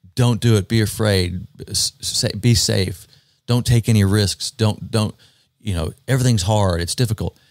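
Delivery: ordinary delivery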